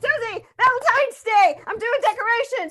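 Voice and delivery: fast rushed speech. Redoing a timed game with twenty-one seconds, the speaker starts the scene with fast-paced delivery. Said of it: "Let's do it faster now".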